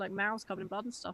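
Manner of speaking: ordinary delivery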